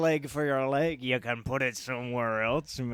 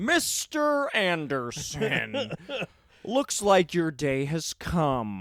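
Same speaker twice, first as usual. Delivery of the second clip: very slow, deliberate, swooping sing-song, every word drawn out; 4 semitones higher than usual. Joking about dressing as a film villain greeting strangers: Agent Smith voice. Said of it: "start dressing like Mister Smith".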